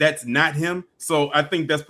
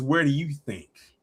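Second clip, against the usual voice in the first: mock sultry, seductive, teasing come-hither delivery; 4 dB quieter than usual. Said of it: "she said it so seductively".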